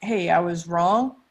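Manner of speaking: ordinary talk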